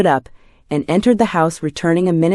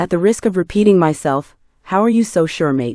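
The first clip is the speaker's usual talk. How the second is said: ordinary delivery, nothing marked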